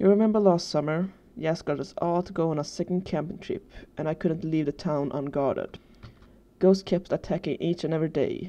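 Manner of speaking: ordinary delivery, nothing marked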